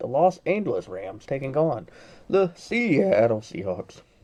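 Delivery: voice cracking. Video host listing the remaining playoff teams, voice cracking. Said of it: "My voice cracked".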